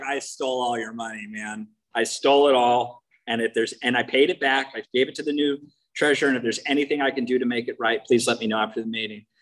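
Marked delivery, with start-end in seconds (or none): none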